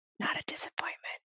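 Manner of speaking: soft, voiceless, close whisper. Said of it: "just the lean in whisper for the punchline".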